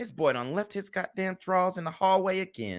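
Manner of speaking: griping, muttering under the breath. Imitating a resentful mother outside her son's door: imitating a mother muttering under her breath. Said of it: "She saying the shit under her breath".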